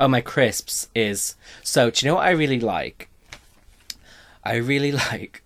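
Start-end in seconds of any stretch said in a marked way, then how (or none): 4.4-5.3 giggling, laughing through the words. Naming a favourite crisp flavour: laughing while talking. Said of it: "I don't know why I'm laughing".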